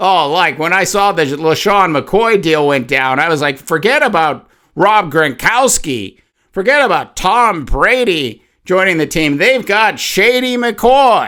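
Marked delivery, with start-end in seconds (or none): 3.6-11.3 dripping sarcasm, faux-impressed and pretend-amazed. Retelling a reaction to a running back signing: imitating own sarcastic remark. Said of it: "you could hear the sarcasm in that".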